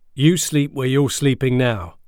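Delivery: hard-sounding. Joshua's dad cuts into the boys' argument about switching beds, tough. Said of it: "His voice sounded tough".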